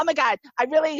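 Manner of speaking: excited gushing voice. Retelling meeting a comedian after his show, imitating own gushing fangirl tone. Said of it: "I was, like, totally fangirl".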